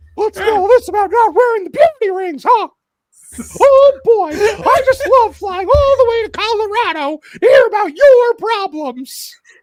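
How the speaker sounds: very high, loud cartoon mouse voice. Showing off a favourite impression, doing the South Park Mickey impression. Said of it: "That's my Mickey impression".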